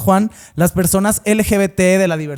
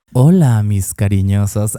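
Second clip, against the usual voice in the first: very deep, sensual voice; 10 semitones lower than usual. Greeting the audience while imitating the cohost: imitating Juanjo's sensual voice. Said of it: "Estoy imitando la voz del Juanjo".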